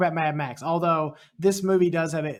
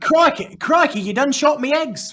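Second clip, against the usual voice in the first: fake, very high, loud Australian accent; 10 semitones higher, 6 dB louder than usual. Retelling a scene, the speaker voices the man who was shot: put-on Australian accent. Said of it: "Australian accent".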